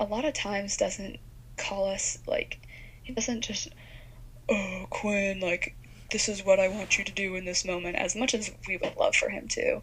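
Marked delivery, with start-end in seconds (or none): 4.5-7.9 heavenly voice speaking down from above. Explaining that God rarely calls people so directly; God voice impression. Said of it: "Was that God's voice? Was that your impression?".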